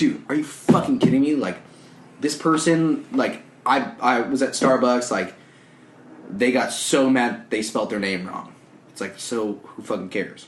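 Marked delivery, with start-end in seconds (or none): none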